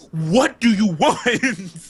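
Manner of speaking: put-on, very slow, high, drawn-out exasperation. Retelling being questioned by a district manager: retelling an exasperated reply. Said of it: "there's just this exasperated look on my face".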